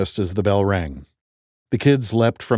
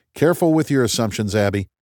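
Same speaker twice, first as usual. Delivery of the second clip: plain reading voice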